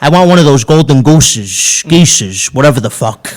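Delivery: bratty, demanding Jersey mobster voice. Riffing on mashup voices, the speaker does Tony Soprano as Veruca Salt. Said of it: "like Tony Soprano was Veruca Salt".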